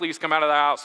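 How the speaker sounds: usual speaking voice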